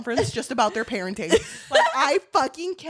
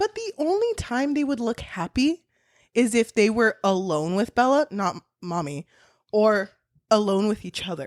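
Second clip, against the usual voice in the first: normal talking voice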